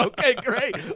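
high-pitched, said through laughter.

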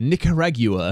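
Nicaragua said slowly, mock British pronunciation.

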